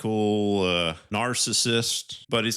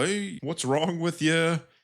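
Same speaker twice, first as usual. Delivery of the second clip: acted mad, confronting yell, high pitch; 7 semitones higher than usual. Retelling a movie scene where one character confronts another: imitating Rami Malek yelling. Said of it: "he starts yelling at him".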